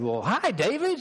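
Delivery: put-on heavy Southern American accent. Retelling a phone call from Little Rock, Arkansas: imitating Stephen Lawson's Southern accent. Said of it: "He's got this strong southern accent".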